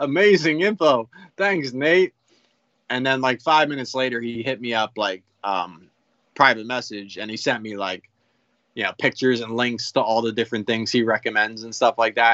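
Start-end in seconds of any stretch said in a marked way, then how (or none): 0.0-2.1 mock sarcastic, pitched up. Recounting a reply to a one-word comment, retelling a sarcastic reply. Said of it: "So I'm sarcastic".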